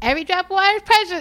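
put-on loud, very high-pitched little kid voice. Quoting a child repeating an adult's words; little kid voice. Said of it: "you could hear the little kid voice".

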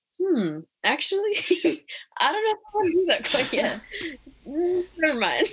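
high, laughing, hesitant voice.

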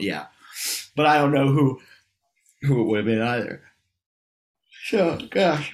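high-pitched words spoken through a yawn. Tired after a ten-hour drive and a late night, yawning while talking. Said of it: "I'm yawning so much".

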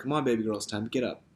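tender, sweet, gentle coaxing tone. Retelling Jesus waking the dead girl: imitating Jesus's sweet endearing invitation. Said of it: "a sweet little endearing invitation".

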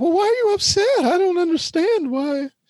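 prissy, high-pitched Southern belle voice. Mocking women who ask why you're upset, the speaker uses a Southern belle voice. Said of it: "That's my voice of a Southern belle".

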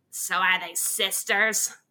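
woman's character voice. Retelling a woman at the pool questioning the speaker's mom, put-on voice of the woman. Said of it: "My mom always puts on the voice, so I'll put it on too".

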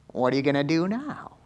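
a little whiny in tone. Quoting the devil's favorite line to listeners: whiny devil voice. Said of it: "It's actually a little whiny".

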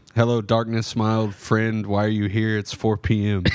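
ordinary talk

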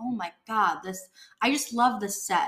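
ordinary talk

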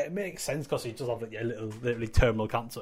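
ordinary delivery

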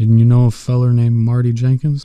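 usual speaking voice

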